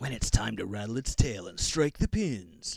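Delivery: corny, overplayed, cheesy, hammy delivery. Commenting on bowling footage with a co-host, in a cheesy voice. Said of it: "That's my cheesy voice".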